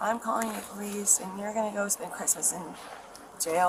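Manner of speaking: usual speaking voice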